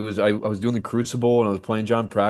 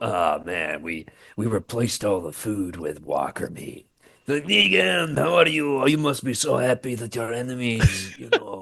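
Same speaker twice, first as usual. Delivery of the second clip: put-on heavy Croatian accent. Retelling a scene between two actors, doing a Croat impression. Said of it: "That's a good Croat impression too".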